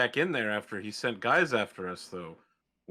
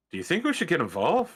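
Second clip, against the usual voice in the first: put-on broad, thick Irish accent, pitched up; 5 semitones higher than usual. Turning to a companion as three people run toward them, in an Irish accent. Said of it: "very Irishly".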